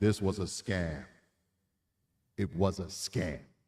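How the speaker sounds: deep, slow, pronouncing voice of God. Commenting on news coverage of a case, putting on a God voice. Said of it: "Let me put my God voice on".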